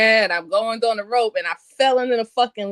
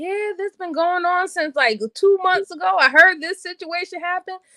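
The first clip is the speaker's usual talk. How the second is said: pitched-up, nosy, gossipy voice; 8 semitones higher than usual. Retelling what neighbors tell reporters after a crime: imitating a nosy neighbor. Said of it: "can tell everything to the reporters".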